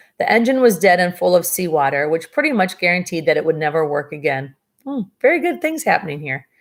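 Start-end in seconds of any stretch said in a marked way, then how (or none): 4.9-6.4 ironic, falsely bright, sarcastic sing-song lilt. Reading a story aloud, commenting on the disaster: sarcastic. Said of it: "That was my sarcasm".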